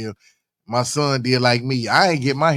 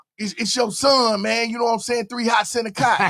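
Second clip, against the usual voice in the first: very high, scratchy, raspy put-on voice; 11 semitones higher than usual. Retelling a phone call from a man claiming to be his son, imitating a raspy voice. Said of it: "you hear his voice all raspy".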